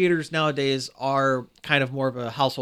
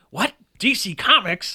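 higher, louder, indignant cartoon character voice. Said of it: "Wesley Snowman says".

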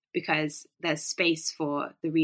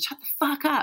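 mock screamed outburst, very high-pitched and frustrated; 10 semitones higher than usual. Recalling ripping off headphones while playing, the speaker re-enacts the moment: retelling a scream. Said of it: "and I literally screamed".

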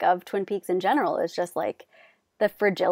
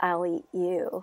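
acted chilling voice, quieter; 4 dB quieter than usual. Retelling a character's line that turned to another character: imitating a chilling voice. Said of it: "in this, like, really, like, chilling voice".

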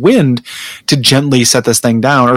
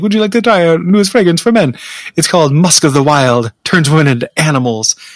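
put-on Caribbean accent; 4 semitones higher than usual. Retelling a perfume demo lady offering a new fragrance, in a Miss Cleo accent. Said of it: "Miss Cleo accent".

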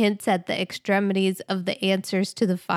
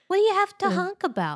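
put-on bewildered, baffled tone, higher; 11 semitones higher than usual. Doing an impression of mom, baffled by city honking: imitating baffled mom. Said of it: "a little impression".

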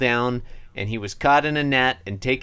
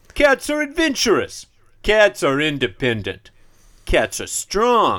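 high, swooping, slow, sing-song cartoon cat voice; 5 semitones higher, 4 dB louder than usual. Quoting a co-host's reading of comic panel one; Garfield voice. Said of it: "the Garfield voice".

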